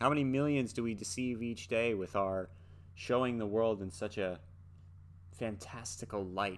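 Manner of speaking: normal talking voice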